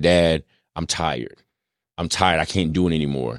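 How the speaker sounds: put-on crying child voice, tearful. Retelling a daughter coming to him crying: imitating a crying child. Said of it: "baby girl just came to me crying".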